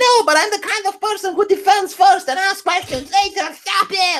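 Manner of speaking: very high, overwrought, hysterical woman's voice. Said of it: "this hysterical woman".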